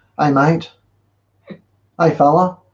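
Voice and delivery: casual put-on Australian accent. Speaker explaining accents, showing how australian women address men, in a put-on australian accent. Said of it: "and you know it's like an accent".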